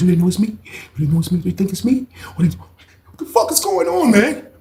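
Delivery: frightened, anxious rising voice. Retelling how a man asked if they knew it was him: imitating Shane talking scared. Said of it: "he was talking like he was scared".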